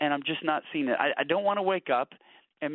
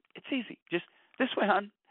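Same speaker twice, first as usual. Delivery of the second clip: easy, light voice. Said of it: "She goes".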